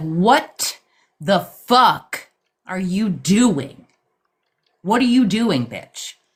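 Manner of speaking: play-acted, blunt, direct, confrontational, demanding tone. Retelling a dream where someone confronted the speaker: imitating someone speaking bluntly. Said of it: "he was direct".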